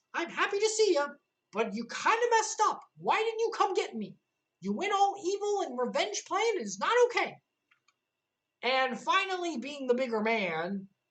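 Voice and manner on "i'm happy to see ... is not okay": very high-pitched, firm and stern voice. Retelling a story scene, voicing Mickey scolding an old friend: stern Mickey voice. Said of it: "putting on his best stern Mickey voice".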